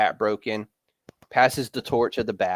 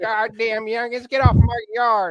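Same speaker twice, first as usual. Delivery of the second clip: put-on old man voice, much higher; 13 semitones higher, 3 dB louder than usual. Joking about a cartoon character's surprisingly high voice, old grandpa voice. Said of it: "whose grandpa is this?".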